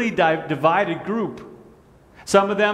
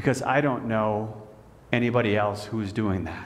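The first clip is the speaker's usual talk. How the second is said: hushed, soft half-whisper; 7 semitones lower, 5 dB quieter than usual. Retelling a reply given on a Zoom call: imitating a half-whispered voice. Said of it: "He said again in a whispered voice".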